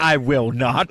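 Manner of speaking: affronted, indignant, flat-out refusal, acted out. Imitating a roommate refusing to do the dishes: imitating an indignant refusal. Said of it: "I love how indignant you are".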